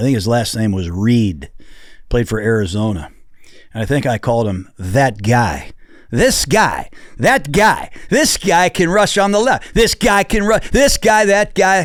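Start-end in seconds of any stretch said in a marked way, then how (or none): 6.1-11.8 mock, pitched-up broadcast analyst commentary. Retelling his own past draft commentary: imitating his own draft commentary. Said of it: "I used to say when I was doing the draft".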